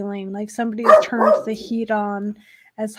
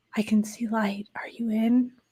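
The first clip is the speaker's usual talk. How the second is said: soft, quiet pleading voice, quieter; 7 dB quieter than usual. Voicing an unseen voice calling from behind a wall: quiet pleading voice. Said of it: "Quietly, you hear the voice say".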